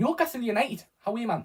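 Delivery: put-on Geordie accent. Reacting to Newcastle United being drawn: Geordie accent. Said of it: "That is my best of Duna Geordie accent".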